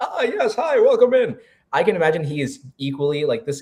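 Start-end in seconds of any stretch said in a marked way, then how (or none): 0.0-1.4 hearty, jovial, very high, drawn-out voice. Players picturing a character, one voices his greeting, jovial welcoming voice. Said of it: "trying to project like the jovial".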